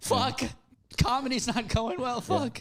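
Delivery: acted-out high, tearful, weepy sobbing voice. Retelling weeping on a plane: imitating own weeping.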